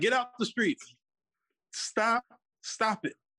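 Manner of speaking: street-style preaching voice.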